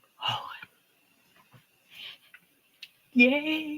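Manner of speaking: tearful joy. Congratulating someone on long-awaited good news, crying with joy. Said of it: "I'm crying with you".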